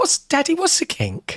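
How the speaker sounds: put-on very high-pitched little-girl voice. Retelling a daughter's words at bedtime: imitating his daughter. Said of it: "She went".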